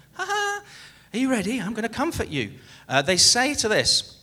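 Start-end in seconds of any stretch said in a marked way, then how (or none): 0.2-2.5 put-on very cheerful, reassuring, high sing-song voice. Imitating plane crew comforting passengers in case of a crash, in a very cheerful voice. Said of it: "in a very cheerful voice".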